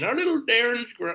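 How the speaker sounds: patronizing, talking down. Mocking a friend's online comment: imitating Steve, condescending. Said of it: "super condescending".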